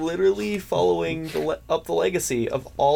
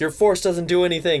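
ordinary talk

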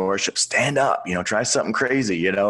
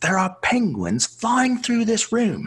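put-on very high, swooping, clumsy English accent; 14 semitones higher than usual. Retelling what a brother-in-law said when they asked him, in a butchered English accent. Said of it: "I'll butcher the English accent".

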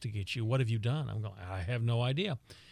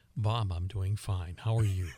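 polished on-air radio announcer voice; 3 semitones lower than usual. Radio guest answering the podcast host's greeting, in his best radio voice. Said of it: "You're using your best radio voice".

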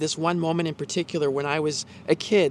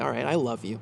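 mock-sheepish, acted reluctant tone; 5 semitones lower, 5 dB quieter than usual. Told to say it to a guy he dislikes, retelling a sheepish reply. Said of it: "we kind of sheepishly say".

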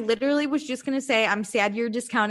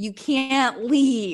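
put-on yelling. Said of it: "everybody yells at her for leaving".

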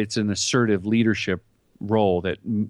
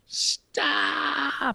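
mock very high, raspy, rough yell; 4 dB quieter than usual. Retelling stopping two cars on set: retelling a yell. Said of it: "And I yell".

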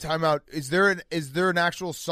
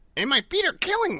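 very high, cartoon-style squid voice; 10 semitones higher than usual. Asked for another Squidward line, the speaker delivers one in Squidward voice. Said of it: "Give me another Squidward line real quick".

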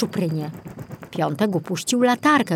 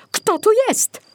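shrill, very high-pitched yell; 14 semitones higher than usual. A man senses someone in his dark room, shouting. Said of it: "Krzyknął".

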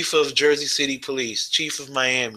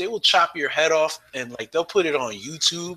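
ordinary talk

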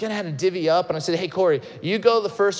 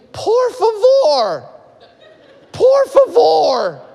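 very high, very loud, stretched-out scream; 12 semitones higher, 9 dB louder than usual. Retelling a story, the speaker imitates someone screaming from the corner. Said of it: "He's screaming".

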